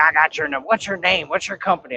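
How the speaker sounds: southern drawl impression. Retelling an argument about moving a truck, quoting the other man in a southern drawl. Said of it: "he had the most southern drawl".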